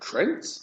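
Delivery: "Trent" said with rising, question-like lilt. Recapping matches and naming the next competitor, trent rising like a question. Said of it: "I always do Trent with a question mark".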